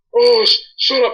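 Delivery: loud, stammering angry outburst. Retelling how the other Nova went ballistic at a compliment: imitating Alex Nova's voice. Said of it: "because this is his voice".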